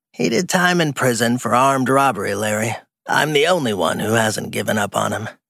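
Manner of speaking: croaky, rough, damaged-sounding voice. Brenda answers Larry about her son in a cigarette-damaged croak. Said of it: "He turned at the sound of a cigarette-damaged croak that barked off the walls. [name] Friedman, 70 years old, / He turned at the sound of a cigarette-damaged croak that barked off the walls. [name] Fr".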